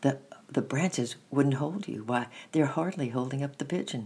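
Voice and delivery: ordinary delivery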